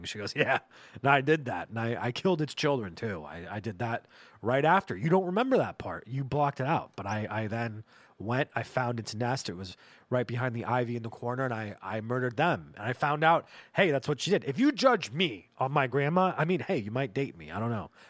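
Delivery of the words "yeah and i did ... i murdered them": plain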